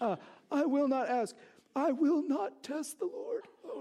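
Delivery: showy voice, as pious as possible. Retelling Ahaz answering the Lord's offer of a sign, Ahaz in a mock pious voice. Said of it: "this is like my most pious voice".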